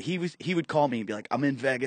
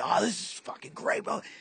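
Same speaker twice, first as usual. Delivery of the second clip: mock all fired-up, very high, excited gush; 10 semitones higher, 4 dB quieter than usual. Retelling a radio coworker after a show: imitating someone excited. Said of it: "all excited".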